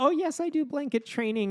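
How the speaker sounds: piping, very high-pitched voice. Imitating a mother from a documentary in a high-pitched voice. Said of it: "in her high-pitched voice or whatever".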